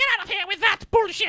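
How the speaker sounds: very high, cartoon-style voice. Retelling episodes of a cartoon, imitating Cobra Kai voice. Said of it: "then Cobra Kai would be like".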